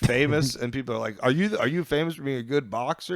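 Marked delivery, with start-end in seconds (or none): none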